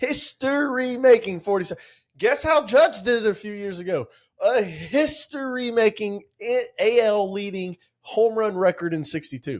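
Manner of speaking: high, insistent, worked-up yelling. Arguing with a listener about baseball history; yelling. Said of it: "you're yelling right now".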